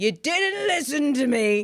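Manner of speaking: put-on high-pitched elderly man's heckling outburst. Telling how an old man yelled at him in the middle of the show: imitating an old man yelling. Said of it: "this old guy suddenly yells out at me".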